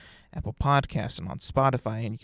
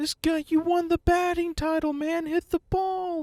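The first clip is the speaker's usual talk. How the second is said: put-on very high, drunken screaming yell. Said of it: "he was just screaming".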